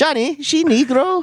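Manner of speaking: very high-pitched grandmother voice. Retelling what a Cuban grandma said at home: imitating a Cuban grandma. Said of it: "his Cuban grandma said the line from Bad Boys Two".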